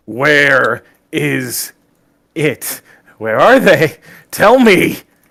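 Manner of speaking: very slow, drawn-out, rising shout. Casting a spell on an enemy, then demanding answers in character: shouting at them. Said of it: "literally shout at them".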